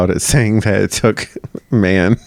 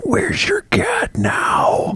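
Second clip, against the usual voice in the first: very slow, menacing, wicked whisper; 4 dB quieter than usual. Retelling how an executioner whispered to a kneeling woman: imitating a wicked whisper. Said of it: "whispered in her ear, real, like, all wicked".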